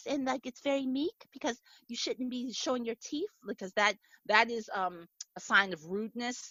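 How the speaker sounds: high, soft, meek Japanese woman's voice. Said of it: "a Japanese woman would talk like this".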